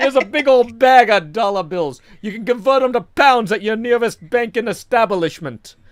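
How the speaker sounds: loud, classic cartoon-bear voice. Speaker doing a tooth-fairy bit, slipping into a Yogi Bear voice. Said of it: "Now I'm Yogi Bear, apparently".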